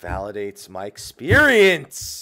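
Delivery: mock-offended sarcasm. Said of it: "That's sarcasm for anyone who doesn't speak people".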